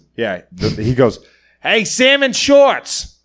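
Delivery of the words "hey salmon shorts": very high-pitched, acted-out shouted yell. Telling how a stranger on a bike yelled at them, retelling a yell. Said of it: "And the guy just yells".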